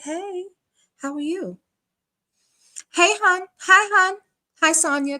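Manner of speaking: mock syrupy, overly polite, very high-pitched sugary voice. Acting out a woman who sits down real polite: imitating an overly polite greeting. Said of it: "real polite".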